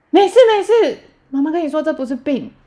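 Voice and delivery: high, loud, hurried, flustered soothing voice.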